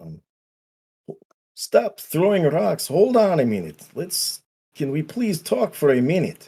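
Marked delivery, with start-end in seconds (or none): 1.5-6.5 shouting, pitched higher. Calling out through the door to stop the rock throwing: yelling out. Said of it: "yell out".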